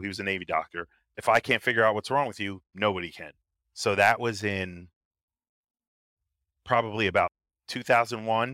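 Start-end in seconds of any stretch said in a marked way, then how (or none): none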